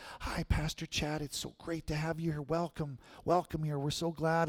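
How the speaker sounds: very quiet, mild, soft and gentle voice. Speaker retells a pastor welcoming him to a prayer meeting, imitating a soft, gentle voice. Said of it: "he had such a soft and gentle voice".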